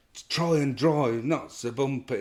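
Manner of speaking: shout with voice jolted and jarred repeatedly. Retelling how a mate shouted while slammed against the roof: imitating a jolted shout. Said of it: "his voice was coming out like that 'cause he was being slammed".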